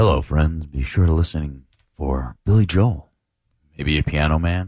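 put-on sports announcer voice. Announcing the day's 80s artist, Jim Nantz voice. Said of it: "in the tone of Jim Nantz".

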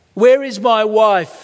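slow, high, loud, drawn-out calling cry. Reading a story, a man in darkness cries out; crying out. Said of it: "Again he cried".

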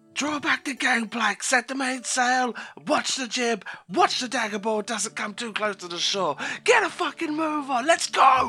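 character voice yelling. Storyteller voicing the captain giving orders once everybody is aboard, Bruin yelling. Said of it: "with a very stern look, just starts yelling".

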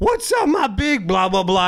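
put-on rowdy, belligerent man screaming, heckling. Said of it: "just fucking belligerently screaming at fucking shit".

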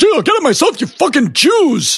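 high comic outburst with wildly swooping pitch. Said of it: "And Rodney goes".

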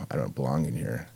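soft, low, tearful voice, close to crying. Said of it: "crying on the phone to my girlfriend".

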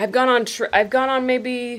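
talking through a yawn. Chatting with listeners about a trip with someone new, talking through a yawn. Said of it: "sorry, that's a yawn".

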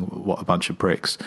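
ordinary delivery

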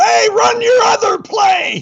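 very high, drawn-out shout. Retelling a game where a fan in the stands yells: imitating a fan yelling. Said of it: "he starts yelling".

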